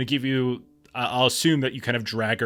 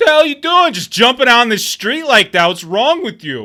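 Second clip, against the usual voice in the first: obnoxious tipsy yell, shrill, very high, very loud; 13 semitones higher, 13 dB louder than usual. Narrating a game, a tipsy driver yells at the player, super loud and obnoxious. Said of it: "And he's like super loud, obnoxious".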